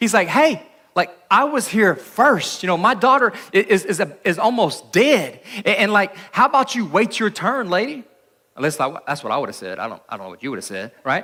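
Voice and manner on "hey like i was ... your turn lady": acted, mildly annoyed, drawn-out and pitched-up. Imagining what a father with a hurt daughter might say, imitate mild frustrated anger. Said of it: "a little perturbed in this moment, a little angry".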